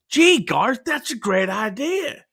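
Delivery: put-on Southern accent. Podcaster retelling a film scene where the band answers the lead, in a southern accent. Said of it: "your southern accent is my everything".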